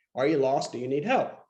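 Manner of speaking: put-on Australian accent. Retelling a stranger offering help on the street: imitating Hugh Jackman's Australian accent. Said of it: "with an Australian accent".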